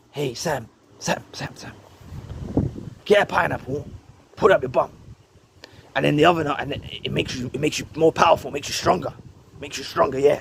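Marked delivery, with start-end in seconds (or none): 0.1-4.9 soft, breathy whispered voice. Telling how Satan would whisper into his followers' ears, as Satan whispering. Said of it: "Satan would start whispering into their ears".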